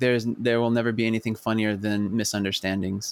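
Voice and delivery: ordinary talk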